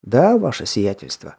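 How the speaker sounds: usual speaking voice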